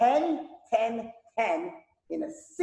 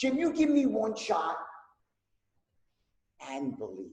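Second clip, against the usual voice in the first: earnest, heartfelt, utterly sincere tone; 3 dB quieter than usual. Speaker demonstrating named tonalities, this one utter sincerity. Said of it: "That's utter sincerity".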